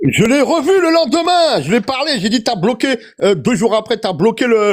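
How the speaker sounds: shouting.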